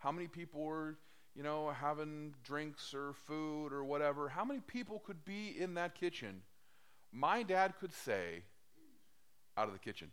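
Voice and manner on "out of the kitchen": mock calm, even, matter-of-fact voice, never raised. Quoting his dad clearing people from the kitchen, imitating dad's calm, unraised voice. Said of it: "At that tone of voice, not raising his voice, not taking that or else kind of tone of voice".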